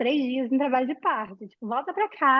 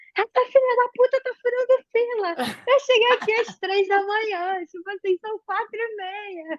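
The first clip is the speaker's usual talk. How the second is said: mock furious, high-pitched, angry yell; 9 semitones higher than usual. Recalling yelling at everyone at the maternity ward reception, retelling an angry yell. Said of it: "eu comecei a berrar".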